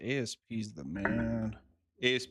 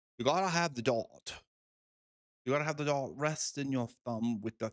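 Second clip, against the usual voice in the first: put-on English accent; 2 semitones higher than usual. Mocking dart players who insist on a dart rest, in a put-on english accent. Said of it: "I gotta have this with the English accent too".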